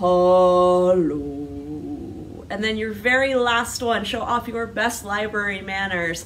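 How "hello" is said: much lower, louder bear voice. Leading a hello rhyme, saying hello as low as we can, low Papa Bear voice. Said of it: "Let's say hello as low as we can".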